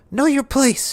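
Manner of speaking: put-on very high female goblin voice. Describing a game scene, the speaker voices a female goblin talking back to a male goblin. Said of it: "a female goblin's voice over here uh, talks back to him".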